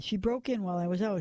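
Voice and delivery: ordinary delivery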